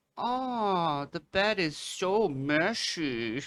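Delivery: high, slow, passive-aggressive tone.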